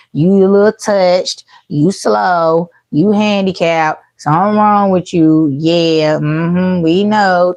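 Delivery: slow, patronizing, humoring sarcasm, acted out. Imitating someone who talks down to another sarcastically: imitating someone talking sarcastically. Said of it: "with such sarcasm".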